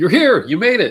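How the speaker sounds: very loud, high-pitched, host-style shout. Greeting a guest as a talk-show host would: Jimmy Fallon impression. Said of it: "that's my Jimmy Fallon impression".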